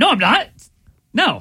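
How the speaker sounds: loud, booming yell at full volume. Denying a teasing question from another speaker: yelling. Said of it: "Why are you yelling at me?".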